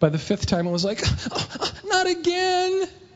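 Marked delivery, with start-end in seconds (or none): 1.3-2.9 acted very high, frustrated child's cry, fed-up exclamation. Parent retelling daughter's tower falling over again, imitating daughter's frustration. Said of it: "All frustrated".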